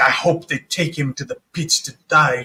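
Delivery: muttered growl under breath. Voicing a woman with a bandaged hand as she wanders off, muttered growl under breath. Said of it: "kind of under her breath, kind of growling".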